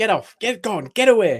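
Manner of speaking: loud shouting, high-pitched. Recalling sleep-talking in bed next to his wife: retelling his own shouting. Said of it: "I start shouting".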